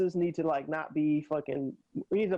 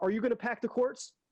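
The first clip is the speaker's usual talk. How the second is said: put-on accusatory tone, higher pitch; 6 semitones higher than usual.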